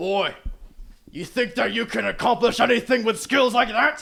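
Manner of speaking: harsh scolding captain voice. Game master voicing the player character's old captain, harsh berating old captain. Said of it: "It is your old captain. / You trained under this man. / You're a failure. You fail academically. You fail athletically. And you failed me".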